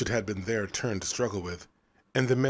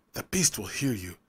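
hissed, hissing voice. A teenager strikes a boy on the shoulder and hisses at him. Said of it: "the teenager hissed".

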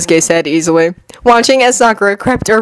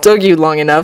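ordinary delivery

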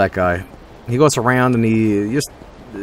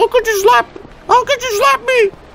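imitated pleading male crying, higher, slower. Retelling how a guy who slapped someone then asked to be slapped, imitating him crying. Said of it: "And he's like crying like".

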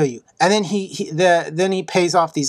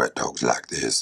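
really deep, very low, breathy rumble; 9 dB quieter than usual. Describing a giant villain from the film 300, in a really low voice. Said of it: "he's got this really low voice".

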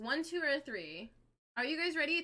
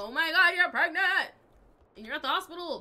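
loud, frantic, panicked outburst; 4 semitones higher, 8 dB louder than usual. Retelling a man's reaction at the hospital during labor, imitating someone panicking. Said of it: "he's panicking".

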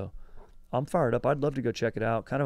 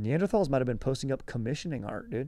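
ordinary talk

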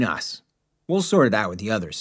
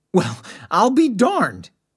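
high, pitched-up, swooping, excited gushing exclamation; 11 semitones higher, 4 dB louder than usual. Narrator reading the historian's reaction to the count's find, gushing excitedly. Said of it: "he gushed out excitedly".

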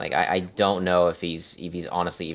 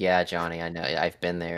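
ordinary talk

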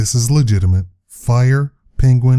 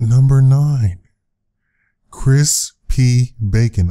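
straight delivery, laughter barely held back. Reading out a numbered list of real people's names, holding back a laugh. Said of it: "I'm trying not to laugh".

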